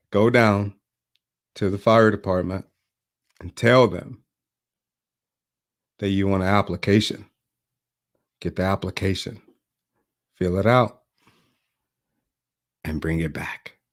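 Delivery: put-on indifferent, flat, unenthusiastic, can't-be-bothered delivery. Retelling a neighbor's answer about a job application: imitating an unenthusiastic reply. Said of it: "he wasn't even that enthusiastic".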